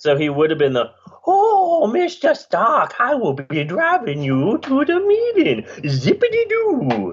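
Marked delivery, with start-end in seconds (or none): 1.2-7.1 high, swooping, drawn-out voice. Imagining a casting as Happy Hogan: Adam Sandler impression. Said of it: "that's my Adam Sandler".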